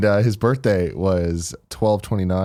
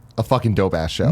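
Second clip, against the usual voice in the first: normal talking voice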